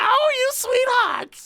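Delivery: put-on shrill, very high, loud elderly woman voice. Recalling drunk restaurant visits, the speaker imitates a 90-year-old waitress. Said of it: "like 90-year-old waitress".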